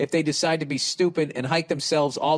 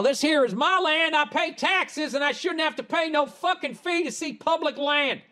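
clumsy fake Southern accent, very high pitch; 12 semitones higher than usual. Acting out what people who refuse to pay the fee say, bad southern accent. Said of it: "I'll do my bad Southern accent".

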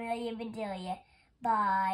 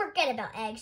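usual speaking voice

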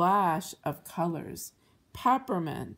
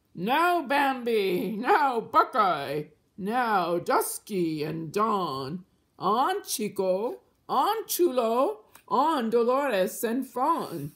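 jolly, merry, high, very slow drawn-out shout; 5 semitones higher, 4 dB louder than usual. Narrator reads the unseen wagon driver calling to his deer, jolly shout. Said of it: "he shouted".

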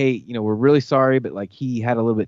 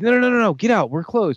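mock yelling, much higher in pitch; 10 semitones higher than usual. Speaker retells a man refusing them a drink after closing, retelling a yell. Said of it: "he starts yelling at us like".

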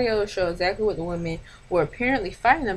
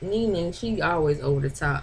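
ordinary talk

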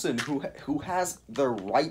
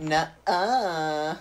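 put-on high-pitched sassy girl voice. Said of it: "I sounded like some sassy girl".

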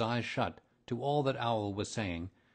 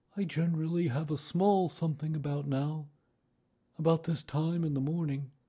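wistful, dreamy, faraway, lightly raised pitch; 6 semitones higher, 4 dB louder than usual. Narrator reading a character's line in a story, said dreamily. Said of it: "he went on dreamily".

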